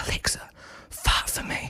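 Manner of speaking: slow, drawn-out, breathy whisper under the breath. Retelling a video of a guy talking to his alexa, retelling a whisper. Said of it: "he whispers".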